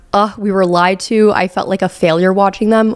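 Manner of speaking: normal talking voice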